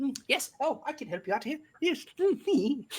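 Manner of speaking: very high, giddy little kobold shopkeeper creature voice. Narrator voicing the kobold who runs the store, greeting customers, giddy Finster kobold voice. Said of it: "fairly average sized kobold running around all giddy like".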